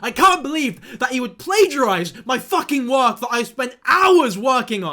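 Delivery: shouting. Talking to viewers in a video about an influencer, shouting. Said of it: "I'm shouting a lot in this video".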